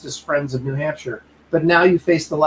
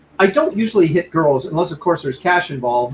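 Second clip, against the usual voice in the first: ordinary talk, nothing marked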